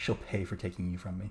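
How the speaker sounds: muttered line. Game master voicing Aurora after a serious glower, muttering under her breath. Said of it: "Aurora kind of mutters under her breath".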